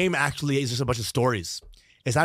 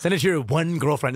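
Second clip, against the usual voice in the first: normal talking voice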